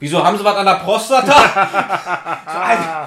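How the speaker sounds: very loud, high, drawn-out shout at full volume. Retelling what the pharmacist asked behind the plastic wall, as a shouted question. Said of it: "wie ich jetzt geschrien habe".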